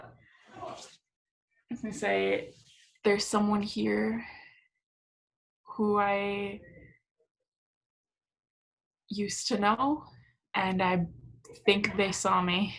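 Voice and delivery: soft, hushed, under the breath. Trying not to blow their cover, telling a companion about someone: speaking quietly. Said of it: "still quietly".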